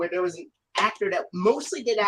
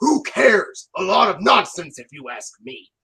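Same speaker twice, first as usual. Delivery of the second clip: very gruff engine voice, slow, drawn out, raised; 7 dB louder than usual. Quoting a favorite episode line: gruff Gordon voice. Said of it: "George Carlin's Gordon voice is very gruff".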